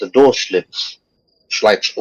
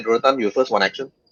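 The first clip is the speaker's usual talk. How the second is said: ordinary talk, nothing marked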